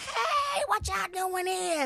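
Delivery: very high, slow, drawn-out gospel-style voice. Retelling how the coach greeted them on walking in: imitating an old gospel church greeting. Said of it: "that old gospel church, "Hey," type thing".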